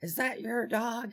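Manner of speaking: put-on very high, loud screaming. Retelling a neighbor confronting the speaker about the dog: imitating a lady screaming. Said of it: "this lady starts screaming at me".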